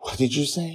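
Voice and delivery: winded, breathing hard. Justin, having stopped shouting, asks Joy: soft, breathing hard. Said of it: "He says softly, though breathing hard".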